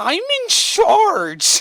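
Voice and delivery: whiniest voice, very high, loud, shrill, swooping. Retelling how Carly's teacher answered her question, imitating a teacher's whiniest voice. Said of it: "in the whiniest voice".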